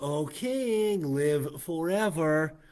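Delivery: cynical, mocking sarcasm, high, slow, drawn out.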